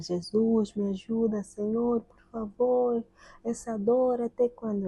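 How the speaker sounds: mock, high, desperate screamed plea. Recalling nights of pain while others slept, retelling own desperate screaming. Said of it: "e eu estou lá a gritar".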